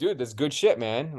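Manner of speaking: ordinary talk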